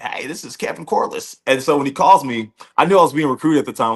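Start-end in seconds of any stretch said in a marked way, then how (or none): 0.0-1.4 rough, gravelly voice. Recalling a coach's first recruiting phone call: Kevin Corliss raspy voice. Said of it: "he has a real raspy voice".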